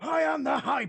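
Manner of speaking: very high, strained warrior character voice. Continuing a voiced bit after another speaker's accusation: Vegeta voice. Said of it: "Trying to do Vegeta really hurts your fucking voice".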